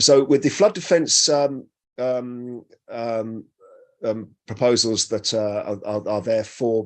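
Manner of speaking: slow, halting, stumbling stutter full of ums. A speaker putting a question about local plans, stuttering and halting. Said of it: "I'm stuttering".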